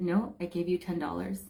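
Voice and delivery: mock steady, unbending, very firm, focused delivery. Retelling telling a cashier about a ten-dollar bill: retelling a very firm reply. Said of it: "Very, very firm".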